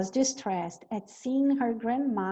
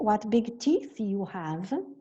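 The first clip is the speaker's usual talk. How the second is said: usual speaking voice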